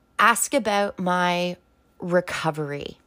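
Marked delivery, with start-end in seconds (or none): 2.0-2.9 stress placed on the word 'recovery'. Telling listeners what to ask about, stress on 'recovery'. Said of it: "I'm very much emphasizing the word recovery".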